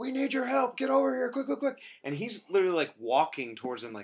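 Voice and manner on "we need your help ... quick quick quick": mock, very high, urgent screaming. Retelling characters screaming at the captain for help: imitating someone screaming. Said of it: "they're screaming at the captain".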